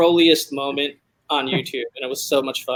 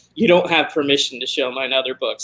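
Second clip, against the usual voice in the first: normal talking voice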